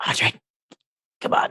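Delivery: hissed shout, whisper-shouting. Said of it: "I'm like".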